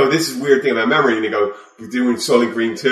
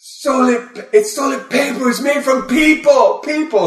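very high, shrill, slow, drawn-out shriek. Retelling a comedy sketch, imitating Charles Manson screaming. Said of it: "he does it with the great Charles Manson".

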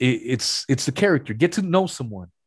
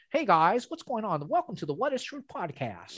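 fake put-on voice, higher and quieter; 6 semitones higher, 9 dB quieter than usual. Showing how a podcast intro might sound in a different voice: put-on Caucasian-sounding voice. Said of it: "maybe if I talk like that".

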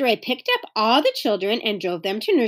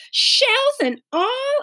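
aghast, horrified, very high-pitched disbelief; 14 semitones higher than usual. Hearing how the eggs went into the batter, she asks back, horrified. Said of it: "asked Beezus, horrified".

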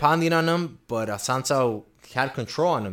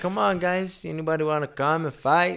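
put-on Brazilian accent, higher pitch; 7 semitones higher than usual. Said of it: "So he has his accent".

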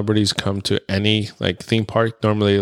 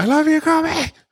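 very high, excited, blurted shout. Retelling yelling out to someone passing in a maze corridor: retelling a yell. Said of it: "yelled out".

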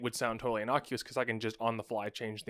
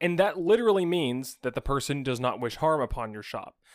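ordinary talk

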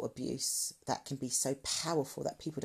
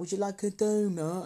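mock condescending voice, high, loud and belittling; 5 semitones higher, 5 dB louder than usual. Showing the kind of voice used on a child, in a belittling voice. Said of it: "it's that type of voice, like, you know, to make you feel, or to belittle you".

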